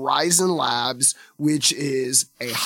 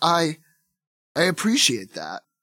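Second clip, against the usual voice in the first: reluctant, begrudging tone with swooping pitch. Narrating a scene where Spidey answers an officer's thanks, grudgingly accepting thanks. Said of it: "Spidey sort of grudgingly takes it".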